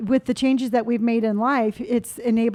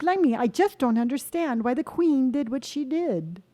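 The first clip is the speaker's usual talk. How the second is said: clumsy, bad, fake British accent; 3 dB quieter than usual. Asked to show it, speaker tries out a bad British accent. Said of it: "Just because you say the word queen and blimey".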